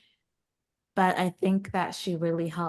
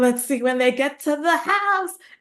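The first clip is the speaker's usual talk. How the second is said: high, loud, eager, impatient exclaiming. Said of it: "and I'm, like, turning the page".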